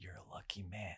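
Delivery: put-on sinister voice. Recounting a man who stared while passing, speaker repeats his words, sinister. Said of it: "the way he said it that time was like kind of kind of sinister".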